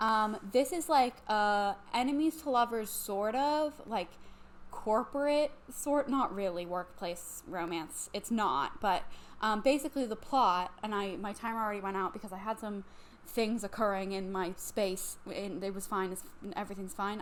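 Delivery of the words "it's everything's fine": fast, soft, awkward delivery. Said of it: "I don't know why I said it like that".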